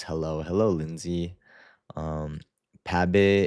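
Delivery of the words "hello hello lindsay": usual speaking voice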